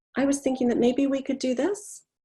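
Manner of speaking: upward inflection at the end. Demonstrating a speech habit to a listener: rising uptick at sentence end. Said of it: "uptick at the end of a sentence".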